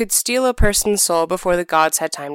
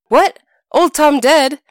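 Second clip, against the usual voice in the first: sudden, piercing, high, loud shriek; 7 semitones higher, 6 dB louder than usual. A man, after his wife screams at him, shrieks out. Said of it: "Tom shrieked out".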